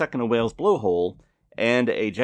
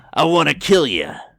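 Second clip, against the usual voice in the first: loud, raised, punchy character voice; 3 semitones higher, 7 dB louder than usual. Repeating the bartender's line when asked to say it again: imitating Moe Szyslak. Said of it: "can you say that again".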